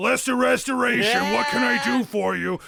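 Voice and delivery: booming giant voice. A massive head appears in front of the players and speaks, booming voice. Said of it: "The voice is booming".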